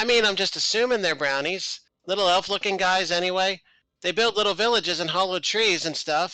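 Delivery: put-on high, loud kid voice.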